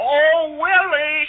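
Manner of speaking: mock, high, shrill hollering at full cry. Willie tells his mother how she hollered at him, retelling a holler. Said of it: "She hollered".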